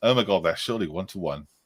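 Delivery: normal talking voice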